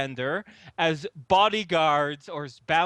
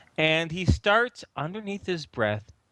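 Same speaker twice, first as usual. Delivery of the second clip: plain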